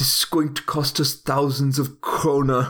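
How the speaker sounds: put-on German accent. Doing a Werner Herzog impression in a gritty home-buying movie: Werner Herzog impression. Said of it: "if you got a good German accent".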